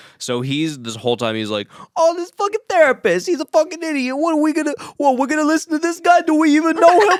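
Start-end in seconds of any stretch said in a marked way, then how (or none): 2.0-7.2 put-on very high-pitched, thickest, heavy Long Island accent. Acting out Danny complaining about a therapist: Danny's heavy Long Island accent. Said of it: "talking in the heaviest Long Island accents".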